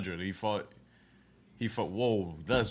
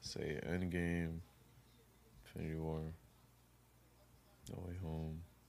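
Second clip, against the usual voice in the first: very soft, hushed whisper. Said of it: "Why are you whispering?".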